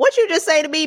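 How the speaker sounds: sharp defensive tone. Showing how someone in defense mode answers: imitating a defensive snap. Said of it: "defense modes be like this".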